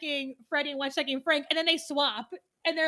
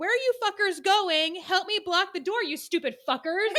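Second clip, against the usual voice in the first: half-strength angry shouting; 3 semitones higher than usual. Retelling a scene where a man yells at his fleeing friends, imitating the yelling. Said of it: "And he's yelling at them".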